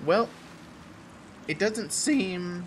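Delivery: high voice breaking on the words. During a game fight, commenting aloud, voice cracking. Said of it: "voice cracking".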